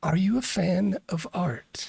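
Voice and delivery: soft whisper. Narrating a game, a thing appears by the painting and speaks to Spantula, soft whisper. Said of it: "kind of whispers to you".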